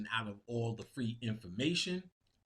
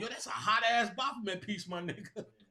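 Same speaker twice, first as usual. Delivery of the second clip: put-on high, hyped-up, gushing excited kid voice; 9 semitones higher than usual. Retelling what kids say on seeing the piece: imitating excited kids. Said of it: "Kids come up to me and go".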